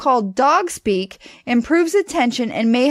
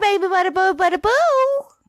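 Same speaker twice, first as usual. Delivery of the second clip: exaggerated, high-pitched cooing baby talk; 8 semitones higher than usual. Showing how to talk to a dog, in high-pitched baby talk. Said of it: "talking in a high-pitched voice with exaggerated emotion".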